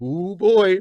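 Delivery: slightly sarcastic voice. Reacting to the penultimate question of the Big Ten: unintentionally sarcastic. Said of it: "That sounded more sarcastic than I meant it".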